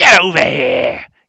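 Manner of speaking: horrible, nasty, rough, booming, very loud voice. Voicing a Draconian who shouts down an alleyway: horrible voice. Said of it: "in a quite a sh-, kind of horrible, uh, voice".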